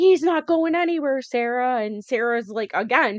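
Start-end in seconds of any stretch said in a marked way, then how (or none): 0.0-1.8 scream, pitched higher. Retelling a reality show argument: imitating Maria screaming. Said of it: "Maria is screaming".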